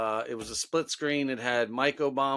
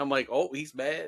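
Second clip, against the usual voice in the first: ordinary talk, nothing marked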